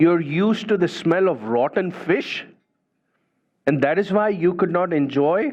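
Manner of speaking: sarcastic, condescending, talking-down tone. Telling a story, voicing the irritated king answering her; mock-sarcastic, condescending tone. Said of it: "very sarcastically and, in a condescending tone".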